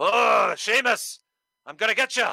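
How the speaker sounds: loud, high, slow, drawn-out call. Mocking how a wrestler talks on the mic: Drew McIntyre impression. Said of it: "Drew's speaking about".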